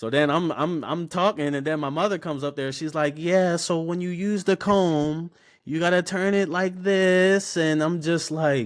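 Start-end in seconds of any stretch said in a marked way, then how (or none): 3.2-7.6 prim, proper, high, slow, drawn-out voice. Retelling his mother teaching a haircutting class: imitating mother's proper voice. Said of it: "she'll say it all proper".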